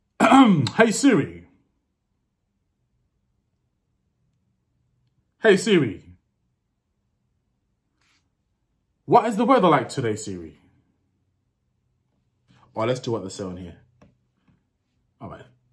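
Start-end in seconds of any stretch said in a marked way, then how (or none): 0.2-10.6 loud, swooping put-on English accent. Trying out commands on a phone assistant, speaking in an english accent. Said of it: "I'll do the English accent".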